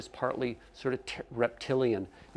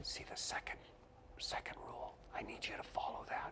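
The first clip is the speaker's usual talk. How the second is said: quiet, soft whispered aside. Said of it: "sort of quietly say".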